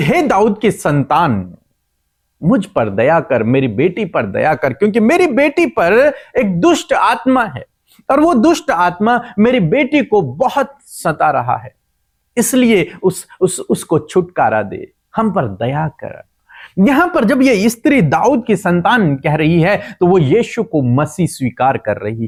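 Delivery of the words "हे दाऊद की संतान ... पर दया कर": ordinary delivery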